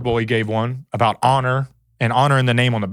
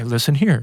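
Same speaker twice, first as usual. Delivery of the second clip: mock calm but angry tone. Imitating a dad who gets mad: imitating a dad calm but mad. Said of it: "gets real calm".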